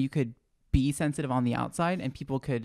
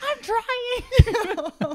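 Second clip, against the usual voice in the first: very high-pitched, squealing, put-on voice through laughter. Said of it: "You're like".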